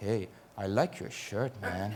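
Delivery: put-on slight, soft, faint Dutch accent. Retelling a man talking behind him in the gents toilets, in a slight Dutch accent. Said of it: "in a slightly Dutch accent".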